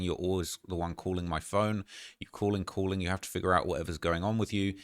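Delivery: normal talking voice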